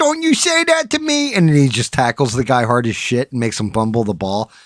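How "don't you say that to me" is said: mock worked-up, mad outburst at very high pitch. Retelling a movie scene where the Waterboy gets mad: imitating the Waterboy getting mad. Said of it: "he gets all mad and he's like".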